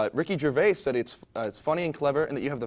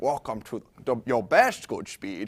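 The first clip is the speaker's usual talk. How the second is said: bad, weak, unconvincing put-on Scottish accent, low pitch; 4 semitones lower than usual. Asked for the Sean Connery accent you used to do for your dad, do a bad Sean Connery impression. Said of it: "That's that's my Sean Connery".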